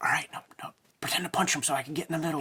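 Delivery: soft whispered aside, kept under the breath. Imitating a fight promoter at a face-off, imitating a whisper.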